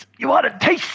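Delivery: put-on, very high-pitched yelled delivery. Quoting how a wrestler shouts his catchphrase: imitating a shout. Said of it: "the way your man shouts".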